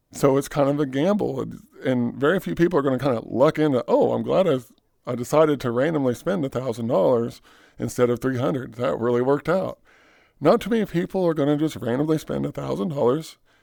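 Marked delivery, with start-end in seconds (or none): none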